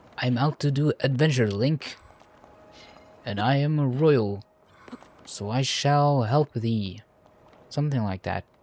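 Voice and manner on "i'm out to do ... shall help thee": grand, royal, noble, heroic adventurer voice. Voicing a royal character who speaks to Link: royal adventurer voice. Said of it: "he has a voice like this".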